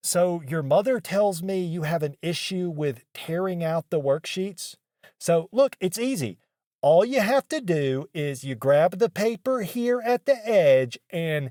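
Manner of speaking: play-acted patronizing, over-explaining, talking-down teacher voice. Retelling how a teacher talked to them in class, mimicking condescending teacher. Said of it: "telling me very condescendingly".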